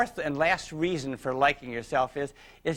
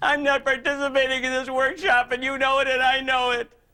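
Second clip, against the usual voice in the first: acted, very high, loud fake-tearful crocodile-tears voice; 10 semitones higher, 5 dB louder than usual. Retelling what a fragile lady in the group said: imitating crocodile tears. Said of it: "melted by these crocodile tears".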